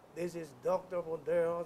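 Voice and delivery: level, droning monotone with no pitch movement. Imitating a friend who talks in a very monotonous voice: flat monotone. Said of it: "very monotonous voice".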